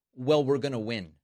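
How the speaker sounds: ordinary talk, nothing marked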